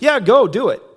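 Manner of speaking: insincere, sarcastic tone. Retelling a prophet's answer to the king: imitating a sarcastic tone. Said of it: "he almost sarcastically says to him".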